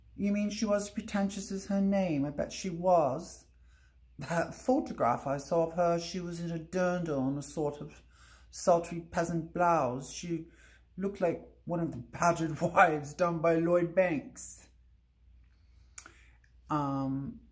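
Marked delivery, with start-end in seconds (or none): 0.2-14.6 showing off an English accent throughout. Showing off an accent while listing personal skills: English accent. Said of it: "I can do an English accent".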